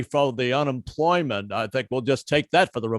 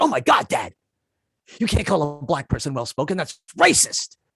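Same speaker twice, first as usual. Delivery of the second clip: mock, swooping scolding outburst; 2 semitones higher than usual. Retelling how the daughter scolded him: imitating daughter scolding. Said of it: "She jumped on my ass. She was like".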